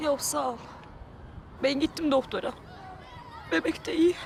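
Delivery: tearful voice. In a drama, a pregnant woman answers a woman offering to take her to the doctor, crying. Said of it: "Niye ağlıyorsun?".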